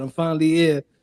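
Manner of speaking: ordinary delivery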